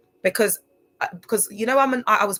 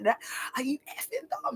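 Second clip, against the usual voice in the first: high, wild outburst, losing it completely; 6 semitones higher, 11 dB quieter than usual. Retelling her reply when asked to go down on him: imitating herself wiling out. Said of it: "I started, like, wiling out".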